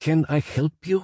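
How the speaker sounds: put-on very high-pitched, thick heavy accented English. Retelling going up to visitors and offering help, in a heavy accent. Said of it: "in my heavy accent".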